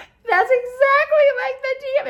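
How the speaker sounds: very high, loud, hard laughing speech.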